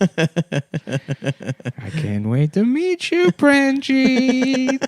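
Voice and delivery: predatory creepy voice, high, very slow sing-song drawl. Mocking a man writing to his pen pal, in a creepy pedophile-like voice. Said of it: "can't stop talking like the world's most prolific pedophile".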